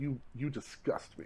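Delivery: play-acted whispered disgust, breathy, hushed, fully condescending. Imagining Jordan watching a player do drills: imitating Jordan with full disgust and contempt. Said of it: "full condescension, full disgust and contempt".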